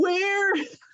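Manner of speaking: very high, theatrical, dramatic outcry. Suggesting a line could be read dramatically: dramatic cry of "where". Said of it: "you could read that with a certain dramatic flair, right? Like".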